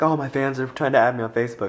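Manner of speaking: normal talking voice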